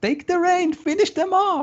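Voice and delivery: very high-pitched goblin voice shouting. Voicing a goblin in a fight scene: goblin shouting.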